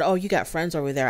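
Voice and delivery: ordinary delivery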